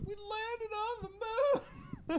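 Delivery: very high, stretched-out, swooping cartoon drawl. Retelling walking up to a car owner, doing a Jim Carrey impression. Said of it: "I walked up like Jim Carrey".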